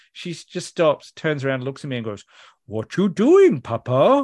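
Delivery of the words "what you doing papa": put-on very crazy little-kid voice, high, loud, swooping, drawn out. Retelling her stopping and turning around while he films her, imitating a really crazy voice. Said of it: "With this really crazy voice".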